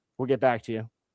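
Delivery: lifeless, flat tone. Retelling a phone call with a legal department: imitating a dead tone. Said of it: "He came back dead tone and goes".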